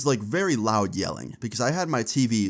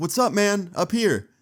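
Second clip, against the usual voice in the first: high, hollered, shouted calling out; 9 semitones higher than usual. Retelling calling down from a window to a man: retelling own yell to the street. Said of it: "So I yelled back".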